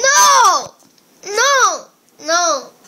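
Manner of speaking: crying while speaking. Refusing as a parent tries to pull out a loose tooth, crying. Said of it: "you're crying".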